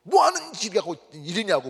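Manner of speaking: angry, blurted outburst.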